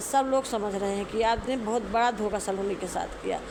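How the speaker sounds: normal talking voice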